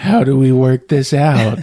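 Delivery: put-on whisper. Retelling a movie scene where a caught man leans forward: imitating Taylor Kitsch whispering. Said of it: "leans forward and starts whispering".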